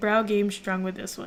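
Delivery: ordinary talk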